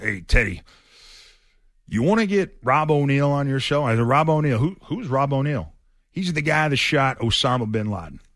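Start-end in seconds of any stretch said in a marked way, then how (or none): 0.0-3.8 put-on southern drawl. Retelling a phone call from a good friend, in John McClain's Southern drawl. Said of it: "his Southern drawl".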